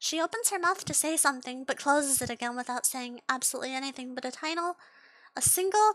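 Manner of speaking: ordinary delivery, nothing marked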